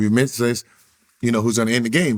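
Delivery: ordinary delivery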